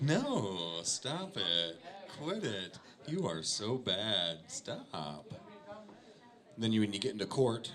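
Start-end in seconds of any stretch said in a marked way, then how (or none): 0.0-5.3 put-on flirty, playful, very slow drawn-out sing-song teasing. Acting out how a woman says no in a joke: imitating a playful, teasing no. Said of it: "She didn't say it like that".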